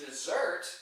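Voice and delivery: desert stressed on second syllable, verb form. Contrasting the noun and verb forms: stress on second syllable of desert. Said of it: "when the accent is on the second syllable, that's used as a verb".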